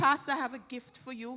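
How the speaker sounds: ordinary talk, nothing marked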